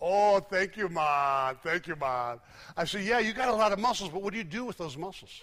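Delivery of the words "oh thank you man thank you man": put-on slow West Indian accent, beautifully done. Retelling complimenting Pete on his muscles, Pete's West Indian accent. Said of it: "West Indian accent, beautiful".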